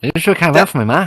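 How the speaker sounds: put-on Irish accent. Carrying on a quote from a film, in a Snatch-style Irish accent. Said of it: "Are you trying to quote Snatch?".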